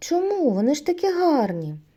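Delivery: astonished, surprised voice with pitch rising up. Narrator reads the little bear asking the others a question: surprised question. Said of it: "здивовано запитав".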